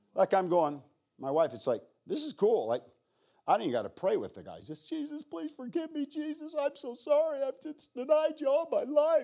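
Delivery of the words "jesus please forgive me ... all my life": high-pitched, broken, sobbing, pleading voice. Retelling what a man said as he turned to Christ, imitating a man sobbing. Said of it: "And he's just sobbing, crying".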